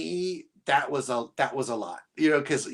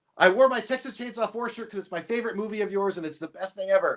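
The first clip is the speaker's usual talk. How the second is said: words tumbling out very fast, high pitch; 5 semitones higher than usual. Retelling meeting the maker of a favourite movie: retelling talking really fast. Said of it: "I said it like really fast".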